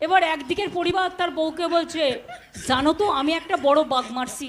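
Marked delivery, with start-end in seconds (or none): none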